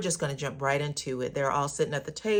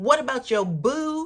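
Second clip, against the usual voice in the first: put-on thick, laid-on Baltimore accent, loud and high; 8 semitones higher, 5 dB louder than usual. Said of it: "her accent came all the way out in this scene".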